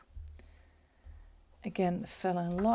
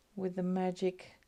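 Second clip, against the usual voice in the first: plain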